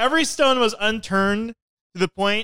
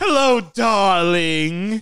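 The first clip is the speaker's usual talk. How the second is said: mock cartoon female villain voice; 4 dB louder than usual. Starting the segment's Cruella minute with a greeting: Cruella de Vil voice. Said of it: "we're having the Cruella minute".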